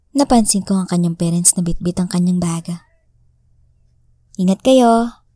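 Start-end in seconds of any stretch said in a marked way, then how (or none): 4.4-5.1 loud, called-out shout. Reading a story, a mother calls after departing travelers: shouting. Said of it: "sigaw ng kanyang ina".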